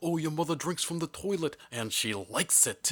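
put-on voice of a fortysomething man, Brooklyn accent. Imitating a kid's line from Sandlot, sounding like a Brooklyn man in his 40s. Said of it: "sounds like a man in his 40s from Brooklyn".

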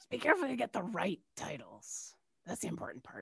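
hushed, very quiet, breathy, barely-there whisper. Speaker voicing what Orca would say to someone, Orca speaking very quietly. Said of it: "very quietly say like".

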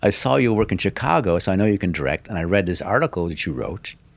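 ordinary delivery

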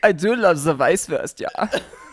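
put-on German accent.

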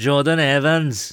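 rough try at Welsh accent. Repeating a player's name as a joke: attempted Welsh accent. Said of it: "that was supposed to be a Welsh accent".

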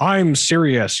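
mocking, sarcastic delivery. Describing a campaign's satirical ads, quoting their closing line, retelling a sarcastic line. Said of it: "in a really sarcastic way".

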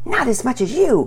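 high, hissed, sharp delivery. Pearson answers Penelope during their quarrel over Daddy's scissors: hissed. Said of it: "Pearson hissed back".

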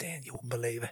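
soft, stunned, disbelieving whisper.

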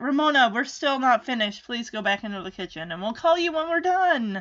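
plain

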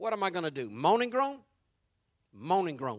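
odd, weird put-on northern English accent. Retelling how a man answered his situation, in a weird northern accent. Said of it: "he says in this weird northern accent".

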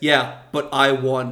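mimicked flat deadpan delivery. Retelling how one character answered another's jab, in a deadpan. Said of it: "And Josh just deadpans".

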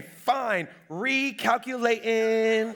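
mock, sniffy, put-upon sat-nav voice. Retelling the GPS after a skipped turn: imitating the GPS with an attitude. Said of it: "my G P S will catch an attitude with me".

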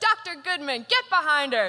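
put-on yelling. Retelling how the attending doctor yelled at the eye doctor: imitating someone yelling. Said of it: "she yells at my eye doctor".

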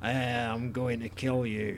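put-on slow, flat, menacing drawl in a Scottish accent.

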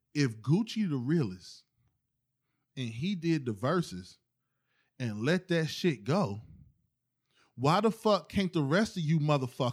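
speaking slowly and clearly. Making a point into the mic to the others: speaking slow and clear. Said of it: "I'm gonna speak slow and, and clear".

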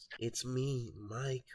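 soft, youthful, younger-sounding put-on character voice. Discussing how the actor voices the game's Michael, quoting his line: higher younger tone. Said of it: "he's doing a slightly like higher pitched tone voice".

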